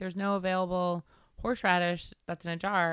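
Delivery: ordinary talk, nothing marked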